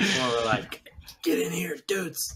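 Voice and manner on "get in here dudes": loud shouted whisper, much higher. Showing the group how the yelling whisper thing goes, in a yelling whisper. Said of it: "You do that yelling whisper thing".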